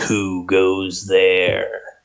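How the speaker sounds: words growled out in a dragon voice. Narrating a dragon that lifts its head and calls out to a stranger: growling dragon. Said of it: "and he he growls".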